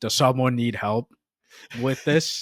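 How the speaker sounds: put-on sarcastic tone. Retelling an offer of help posted to a work group: imitating own sarcastic tone. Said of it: "sarcastically saying".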